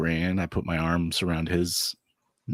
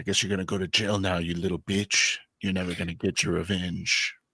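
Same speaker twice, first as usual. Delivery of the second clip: acted-out whisper. Stepping toward him and leaning in, retelling a whisper in his ear. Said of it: "I like kind of whisper in his ear".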